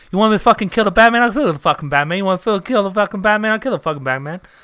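loud, fast, high-pitched rant. Told to do a younger Al Pacino, answer with a younger Al Pacino impression. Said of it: "You got to do younger Al Pacino".

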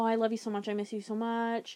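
plain

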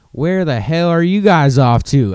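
put-on strong, very country southern accent. Retelling a traffic stop, quoting the cop who walked up, in country southern accent. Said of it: "very, very country southern accent".

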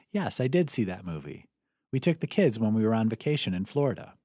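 ordinary talk

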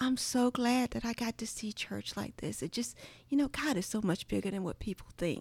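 put-on down-home Southern country accent. Retelling what dad said about church: imitating dad's Southern country accent. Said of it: "my dad has a country accent".

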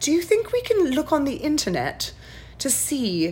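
put-on high, sing-song British accent, curious little child. Retelling what a six-year-old asked after a shark story, imitating her british accent. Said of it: "she's got this British accent".

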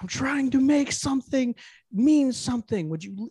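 high, drawn-out, breakdown-style yelling. Retelling an actor's on-set breakdown: imitating Joaquin Phoenix yelling. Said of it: "he's just yelling at some".

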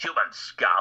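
high-pitched alien voice. Listing voices they have done, the speaker shows off a Strax voice. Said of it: "all the Strax type voices".

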